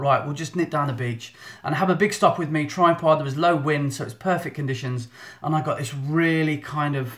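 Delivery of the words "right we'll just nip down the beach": usual speaking voice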